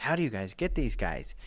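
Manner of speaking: normal talking voice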